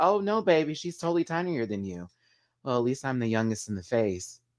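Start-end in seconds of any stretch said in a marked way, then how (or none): 0.0-2.1 soft, hushed, understated, cutting, low-key quiet delivery. Retelling a contestant's read with imitated quiet tone, imitating Willow Pill's quiet tone. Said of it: "In such a quiet tone".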